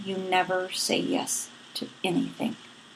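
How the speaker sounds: mock under-the-breath muttering. Retelling a sister's remark at Christmas: imitating speaking under her breath. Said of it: "under her breath".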